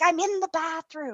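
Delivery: hushed, high stage whisper, half-whispered. Retelling a call where she answers from the bathroom, imitating someone half-whispering. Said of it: ""Why are you whispering?"".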